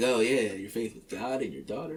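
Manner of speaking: snide, needling, mocking sarcasm. Retelling a remark someone aimed at an artist: imitating a sarcastic remark. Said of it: "being sarcastic".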